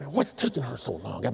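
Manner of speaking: hushed, very low, quiet mumble under the breath. Retelling a college student waiting on his date, imitating mumbling under his breath. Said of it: "he's mumbling under his breath".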